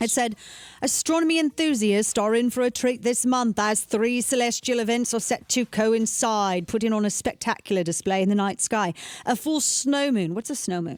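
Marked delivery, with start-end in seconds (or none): 0.0-8.9 affected, put-on British accent. Reading a news story from the Mirror aloud, in a put-on British accent. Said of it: "so I should probably use a British accent".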